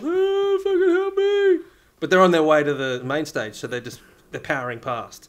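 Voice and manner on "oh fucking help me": muffled cry, very high pitched, slow and drawn out. Imagining someone trapped in a tipped-over Portaloo calling out, muffled cry from inside. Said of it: "you can just hear this muffled".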